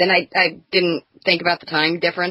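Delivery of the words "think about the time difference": ordinary talk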